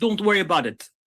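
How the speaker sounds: put-on convincing Jamaican accent. Retelling a man's reply when asked what happened to the guy, imitated Jamaican accent.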